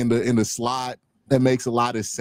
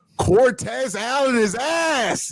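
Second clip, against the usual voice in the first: very high wail, sound stretched long; 12 semitones higher than usual. Retelling how a roommate reacted while looking at his phone: imitating a roommate screaming. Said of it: "he just screams out".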